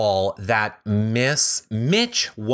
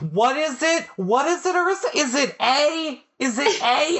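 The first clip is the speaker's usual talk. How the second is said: very high, shrill mock screaming. Imitating Kelsey screaming quiz answers at Phil: imitating Kelsey screaming answers. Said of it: "you basically were screaming the answers at him".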